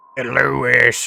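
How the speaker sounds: warped, distorted cartoon voice with horror tone. Imitating a friend doing a distorted Family Guy impression. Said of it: "creepypasta version".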